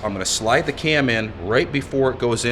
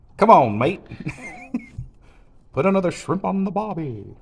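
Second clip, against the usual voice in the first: put-on Australian accent, pitched up; 8 semitones higher than usual. Taking up the idea of doing an Australian accent, in a put-on Australian accent. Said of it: "maybe you got to do the Australian accent".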